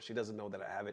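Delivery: secretive, soft, hushed stage whisper. Talking about a surprise gift kept hidden from someone next door: half-whispering. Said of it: "I have to whisper".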